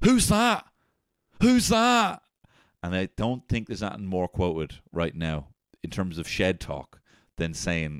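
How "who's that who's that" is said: very high, drawn-out yelled shout. Retelling a man on a video who sees a figure coming down the corridor, imitating a shout. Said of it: "And he just shouts".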